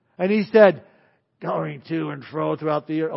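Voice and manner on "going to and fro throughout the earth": put-on devil voice. Retelling Satan answering God about where he has been: put-on Satan voice. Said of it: "he didn't say it like that".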